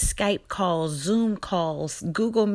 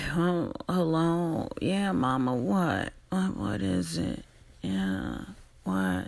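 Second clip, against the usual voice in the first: mock sleepy, groggy, half-awake voice; 3 semitones lower, 4 dB quieter than usual. Retelling picking up her mother's 6 a.m. phone call, acting groggy on the phone. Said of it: "really groggy".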